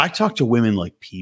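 deep, earnest, low, self-serious would-be profound voice. Retelling how a guy explained talking to women: imitating Chris sounding deep. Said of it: "he said that as though he was, like, a deep dude".

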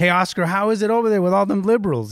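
jokey, teasing tone. Retelling what a city council friend jokingly said on seeing him, retelling a joking remark. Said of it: "she was jokingly".

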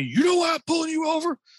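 play-acted, shrill, very high-pitched yelling cop voice. Retelling a police officer yelling at a pulled-over driver: imitating a police officer yelling. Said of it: "he starts yelling at me".

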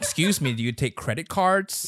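put-on American accent, laid on thick. Speakers take turns trying phrases in an American accent. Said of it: "in like American accent".

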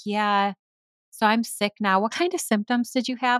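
loaded, pointed, passive-aggressive tone. Acting out someone who got sick after being with you, mock passive-aggressive. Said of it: "Like really passive aggressive".

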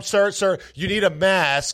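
mock alarmed, high, urgent, panicked voice. Quoting the woman behind the counter as he walks in, retelling an urgent, panicked warning. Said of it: "in an urgent, panicked voice".

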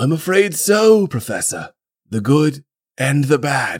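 put-on failed British accent. Voicing Dumbledore in a Harry Potter scene: bad British accent. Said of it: "I can't do a British accent".

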